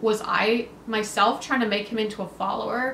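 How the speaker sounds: normal talking voice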